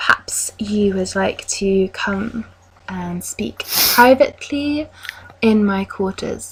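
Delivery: hushed, quiet, confidential, private tone. Game narrator voices a woman leaning in to a player: leaning in very quietly. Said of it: "she leans in very quietly and says".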